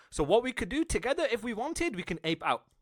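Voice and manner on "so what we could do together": usual speaking voice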